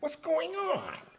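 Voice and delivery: put-on very high New York accent. Retelling Cookie's reply in the room: New York accent. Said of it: "With that New York accent".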